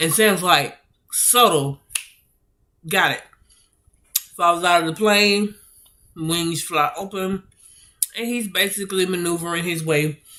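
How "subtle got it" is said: dry, put-on sarcastic tone. Retelling a character's answer to an order: imitating a sarcastic reply. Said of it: "he sarcastically tells the captain".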